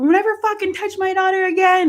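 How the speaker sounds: enraged, very high, furious flip-out. Retelling hitting someone who grabbed a daughter: imitating flipping out. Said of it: "I was flipping out and being rank".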